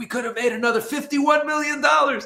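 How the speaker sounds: very high-pitched, furious outburst. Retelling how Ephraim reacted to them being so competitive, acting out a furious complaint. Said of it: "He was he was very furious".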